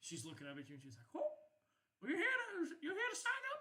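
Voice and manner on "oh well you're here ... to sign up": put-on very high, tiny old elf woman voice. Voicing a short old elf lady greeting someone who came to sign up: old elf lady voice. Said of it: "short, fat old lady, um, elf".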